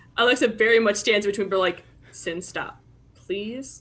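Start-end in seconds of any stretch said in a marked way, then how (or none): 2.2-3.8 very calm, soft pleading tone. Standing between two others, her character asks one to stop, saying it calmly. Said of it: "she's saying it very calmly".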